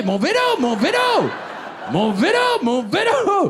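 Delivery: clumsy, off-target put-on voice, high, slow, drawling. Doing an impression after putting the beret on straight: bad Bourvil impression. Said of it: "mais je suis nul en imitation".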